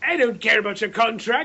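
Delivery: bad, pathetic, put-on Irish accent. Quoting the other man's reply after you mention your contract, bad Irish accent. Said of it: "God, that's Irish".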